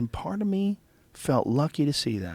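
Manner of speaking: put-on Georgia accent. Retelling a friend's story of watching a hawk: imitating Tom's Georgia accent. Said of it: "he had this, like, sort of Georgia accent".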